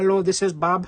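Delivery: put-on very heavy Indian accent. Retelling a call to eBay customer service, Bob's heavy Indian accent. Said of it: "had a very heavy Indian accent".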